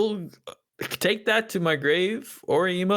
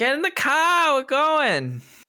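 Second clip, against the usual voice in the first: heavy, pitched-up New Jersey accent; 9 semitones higher, 4 dB louder than usual. After another speaker mentions his new jersey accent, the speaker puts it on. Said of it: "Is that your New Jersey accent?".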